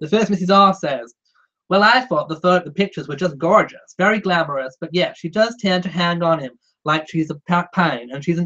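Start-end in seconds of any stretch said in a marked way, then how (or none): 1.7-8.5 clumsy, terrible put-on American accent attempt. Reading a viewer comment aloud, attempting an american accent. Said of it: "I'll try the American accent".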